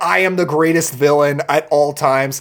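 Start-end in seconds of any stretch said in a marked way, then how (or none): none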